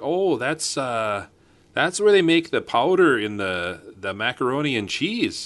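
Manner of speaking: put-on Minnesota accent, high-pitched and drawn out. Retelling what a guy at the bar said: Minnesota accent. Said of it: "Do the accent".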